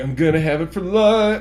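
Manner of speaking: ordinary delivery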